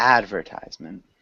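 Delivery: advertisement with AD stressed, said low.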